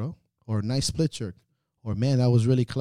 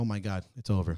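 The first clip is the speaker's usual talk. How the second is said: anxious panic, quieter and slower; 3 semitones lower, 6 dB quieter than usual. Describing a trainer's inner voice while treating an athlete, anxious panicked inner voice. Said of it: "because you're anxious for this person".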